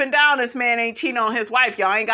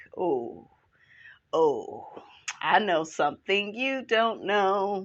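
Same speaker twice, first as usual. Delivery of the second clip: mock smug, teasing know-it-all tone, slow; 3 semitones lower, 7 dB quieter than usual. Retelling how Keke reacted in the scene: imitating Keke smirking smugly. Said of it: "Smirking like".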